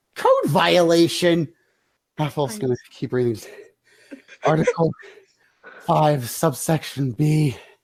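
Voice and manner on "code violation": high-pitched yelling in unison. Two characters yell out almost in unison at the half-elf: yelling. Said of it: "they both yell out almost in unison".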